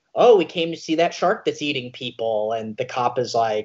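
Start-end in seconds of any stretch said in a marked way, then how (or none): none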